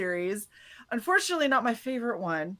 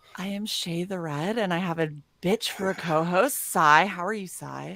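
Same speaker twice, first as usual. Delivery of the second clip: mock sultry tone, lower; 3 semitones lower than usual. Introducing herself and greeting the co-host: put-on sultry voice. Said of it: "Thank you for the nice, sultry voice".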